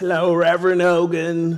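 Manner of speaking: put-on gentle, sweetest little old lady voice. Retelling a phone call from an old lady, imitating Maurice's sweet old-lady voice. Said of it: "she has like the sweetest old lady voice ever".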